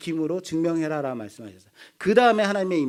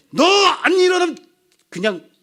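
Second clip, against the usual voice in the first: sudden sharp tone jumping up, very high and loud; 12 semitones higher, 9 dB louder than usual. A parent retells how they got their son out of bed: sharply raised voice. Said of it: "목소리가 톤이 팍 올라가".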